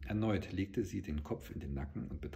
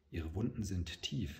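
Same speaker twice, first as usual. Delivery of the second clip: plain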